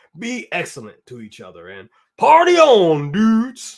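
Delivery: loud, drawn-out surfer dude voice.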